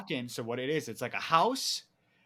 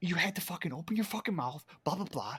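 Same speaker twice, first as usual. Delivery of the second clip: acted angry whisper-shouting, higher pitch; 5 semitones higher, 3 dB quieter than usual. Retelling a hidden argument with a friend: imitating a whisper-yelled argument. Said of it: "we're whispering, yelling, yelling, whispering".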